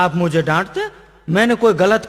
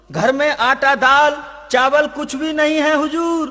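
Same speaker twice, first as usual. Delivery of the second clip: high, slow, loud shouting. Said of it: "इतनी जोर से क्यों चिल्ला रहा है".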